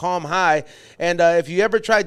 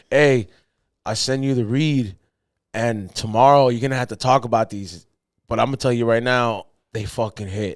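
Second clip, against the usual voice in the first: put-on just-woke-up whisper, lower; 7 semitones lower than usual. Retelling a late phone call from Xavier: imitating Xavier's sleepy whisper. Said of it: "he sounded like he had just woken up".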